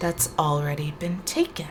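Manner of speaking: hushed, angry half-whisper. Answering visitors who came looking for an item, in a half-whispery, angry voice. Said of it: "his whispery voice ... real whispery and angry".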